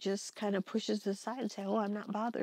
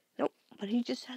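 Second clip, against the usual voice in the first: normal talking voice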